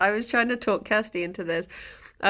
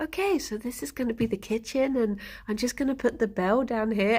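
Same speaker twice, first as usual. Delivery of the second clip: put-on, mock-calm, even delivery. Describing a video of him, retelling how he talks, imitating calm speech. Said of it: "he's just saying things really calmly".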